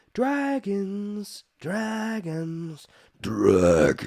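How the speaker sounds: demonic voice.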